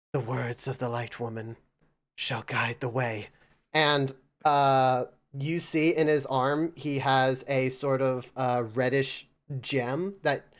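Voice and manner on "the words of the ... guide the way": hushed, half-whispered words. A man held in a tight grapple speaks to his captor, half-whispering. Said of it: "he whispers".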